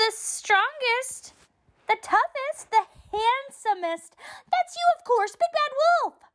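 very high cry, voices in unison. Reading a story, three little piglets answer the wolf together; cried out. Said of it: "The piglets cried together".

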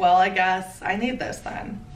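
ordinary talk, nothing marked

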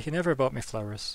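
ordinary delivery

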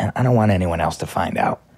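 very low, hushed, secretive whisper. Telling listeners about Bear Mattress, not wanting anyone else to find out: whispering. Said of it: "I'm whispering because I'm putting you guys on".

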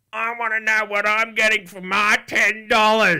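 very high, very loud, shrill, drawn-out entitled gamer voice. Mimicking a crowd of demanding players: impression of entitled players. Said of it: "that was a good impression".

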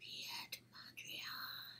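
scary voice. Leading a group in saying an artist's name, scary. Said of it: "Now say it like it's very scary".

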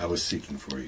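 very soft, barely audible half-whisper. Trying the first line of a rehearsal: half-whispering. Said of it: "even more whispering".

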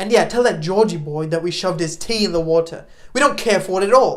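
loud, taunting impression of a specific voice. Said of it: "my best John Oliver impression".

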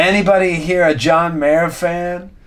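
high, slow, hopeful voice. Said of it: "he just started with".

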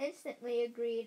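ordinary delivery, nothing marked

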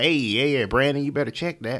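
put-on Southern country accent. Speaker shows how he mixes it up to sound local in the south, southern country accent. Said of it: "make it sound like we in the area".

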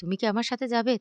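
plain

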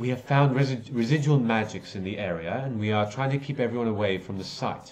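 irritated, impatient, exasperated elf character voice. Voicing an elf investigator growing impatient with a player: impatient elf voice. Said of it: "you can see he's visibly becoming a bit impatient".

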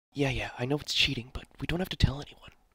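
hushed whisper. Streamer turns aside mid-stream to ask someone a favour, whispering.

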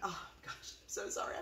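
soft, teary whispered delivery.

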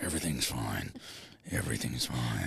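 very low, very deep supervillain voice. Reassuring another speaker that all is fine, sounding like Thanos. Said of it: "you sound like the guy from Marvel".

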